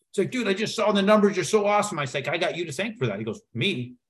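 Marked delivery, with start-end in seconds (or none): 0.3-2.0 excited, pitched-up yell. Retelling a phone call where the caller screamed, imitating someone screaming. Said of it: "he's screaming in the phone".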